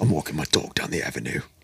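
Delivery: put-on deep, hushed, low voice with a London accent. Taking turns with others saying the same line, Statham accent impression. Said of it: "Your best Statham accent".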